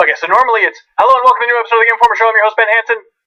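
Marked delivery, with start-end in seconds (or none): 1.0-3.0 fast, pitched-up, rattled-off rushed delivery. Podcast host showing how he normally says his show intro: fast rushed show intro. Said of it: "I do say that too fast".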